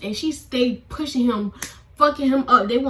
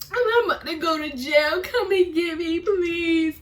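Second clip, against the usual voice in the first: high, tearful, bawling crying voice; 5 semitones higher than usual. Retelling a phone call made while afraid of going to jail: acting out own crying. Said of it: "this me on the phone".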